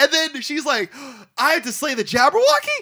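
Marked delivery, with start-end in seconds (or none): 1.4-2.8 mock-incredulous, shocked, acted-out disbelief. Speaker describes a scene to Ethan, acting out her line: mock-incredulous. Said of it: "as if she's never heard this before".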